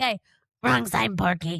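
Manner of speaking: hoarse, congested frog voice. Speaker, hoarse for a week, quotes the character: Froggy from Little Rascals voice. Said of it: "I sounded like Froggy from Little Rascals".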